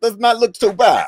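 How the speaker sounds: very high-pitched comic voice. Joking that a co-host's line needs a Borat voice: Borat voice. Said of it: "in, like, a Borat voice".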